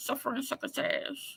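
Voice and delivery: lisping cartoon cat voice. Saying a tongue device makes them sound like the cartoon cat, Sylvester the Cat voice. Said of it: "I sound like um uh the cat from Sylvester the cat".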